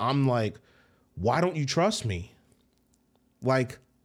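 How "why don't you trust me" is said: ordinary talk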